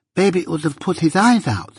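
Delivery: put-on high, lisping, childish little girl voice. Narrator reading a little girl's reply to her mother, lisping little girl voice. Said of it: "lisped the little girl".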